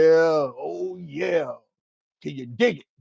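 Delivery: very slow, rough, drawn-out "oh". Trying out a voice during a live stream: Randy Savage impression. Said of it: "I can't do the voice, I tried".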